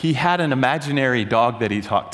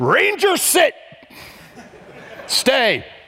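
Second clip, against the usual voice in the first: very high, swooping voice; 13 semitones higher, 4 dB louder than usual. Retelling a lecturer talking to himself like a dog: imitating Doctor Pappas commanding a dog. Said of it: "he would talk to himself like it was his dog".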